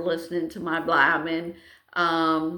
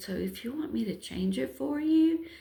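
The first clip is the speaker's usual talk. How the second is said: put-on whisper, higher and quieter; 7 semitones higher, 5 dB quieter than usual. Retelling a helper's offer to change the battery: imitating someone whispering. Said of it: "she starts whispering".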